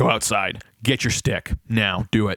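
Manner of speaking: slow, authoritative, commanding dad voice. Describing how another family's dad talks to his kids, imitating a commanding dad voice. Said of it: "good dad voice where he just goes like".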